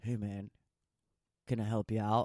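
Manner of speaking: really deep, low voice, dropped way down. Retelling a stranger who pulls over to help, Shaq impression, really deep voice. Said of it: "And you hear a really deep voice".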